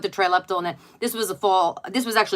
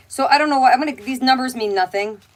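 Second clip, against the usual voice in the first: usual speaking voice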